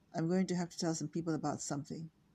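ordinary delivery

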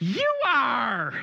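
very high, loud, lit-up, thrilled, beaming excitement. Retelling what a woman said to them, imitating beaming excitement. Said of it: "lights up even more".

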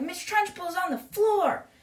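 high, excited, shrieking schoolboy scream. Retelling a story scene where a boy sees a teacher collapse: imitating a character screaming. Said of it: "is just screaming".

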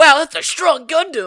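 very high, loud belted shout. Quoting a game pilot voiced like Goku: Goku voice. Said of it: "It's just Goku. He's like".

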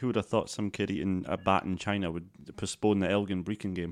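ordinary delivery

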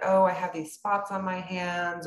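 plain

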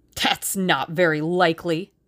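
dismissive, scornful scoff. Tommy responds to Tuppence, scoffing. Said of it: "scoffed Tommy".

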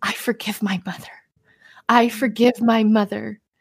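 put-on tearful, crying voice. Retelling how someone cried while forgiving his mother: imitating someone crying. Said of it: "And then he just starts crying".

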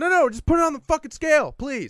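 mock cranky exasperation. Telling a story about a frustrating exchange, the speaker reenacts snapping at someone who kept missing the point. imitating cranky exasperation. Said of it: "I'm still very cranky".

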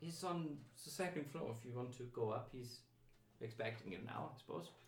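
put-on slight German accent. Game master voices a woman letting the party inside, kind of German accent. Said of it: "It's kind of German".

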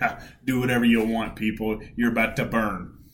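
put-on scoffing voice. Retelling how Jonah scoffs at the city: imitating Jonah scoffing. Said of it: "he's, like, scoffing".

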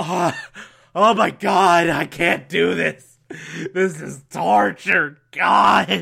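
put-on slow, creaky, worn-out, spent exhausted groan. Comparing Robin to running the mile in high school: imitating an exhausted runner. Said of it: "Robin's like me running the mile".

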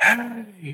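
high screamed word.

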